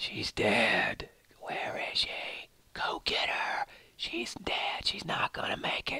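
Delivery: freaky, hushed, eerie whisper. Describing what a character hears, the speaker performs the voices in a put-on whisper. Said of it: "That's my whisper of voice".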